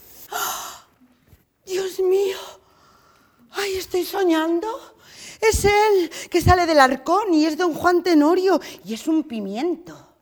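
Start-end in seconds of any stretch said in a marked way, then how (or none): 0.3-4.7 flustered, agitated shock and excited amazement. Seeing someone burst out of a chest, reacting in agitated astonishment. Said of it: "No te alteres mucho".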